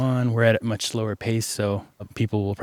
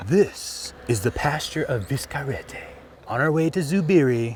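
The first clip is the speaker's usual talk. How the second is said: high, very dramatic put-on narrator voice; 5 semitones higher than usual. Introducing a pasture to the camera on the way: put-on dramatic voice. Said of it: "Very dramatic voice".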